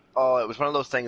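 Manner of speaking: ordinary delivery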